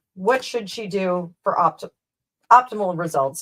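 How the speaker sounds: speech interrupted by hiccups. Asking a question mid-conversation while hiccuping. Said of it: "Sorry, the hiccups".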